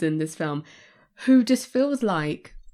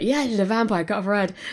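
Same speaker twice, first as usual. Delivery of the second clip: put-on jolly, carefree voice. Retelling a film scene where others are somber: imitating jolly Van Helsing. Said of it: "having a jolly old time".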